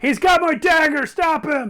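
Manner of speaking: very high, loud yelling in a character voice. A tabletop game player, in character, calling for someone to stop the thief, yelling in character. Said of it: "I'm just yelling".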